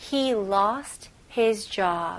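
very slow, careful model-sentence reading.

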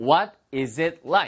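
very slow full form, word by word.

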